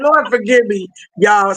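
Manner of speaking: words with a stifled laugh underneath. Speaking live to a guest, holding back laughter. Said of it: "I'm trying not to laugh over here".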